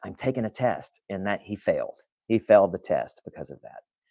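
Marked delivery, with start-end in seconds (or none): 0.0-1.0 soft, hushed whisper under the breath. Retelling what he whispered during an online test: imitating someone whispering. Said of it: "and he whispers".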